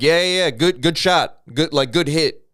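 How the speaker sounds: goading high jeer. Retelling how a kid talked back to the man beating him: imitating someone taunting. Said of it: "taunting him".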